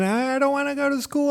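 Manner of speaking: put-on very high, tearful, crying child voice. Retelling a childhood refusal to leave the car: imitating his own childhood crying. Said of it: "I'll be just crying".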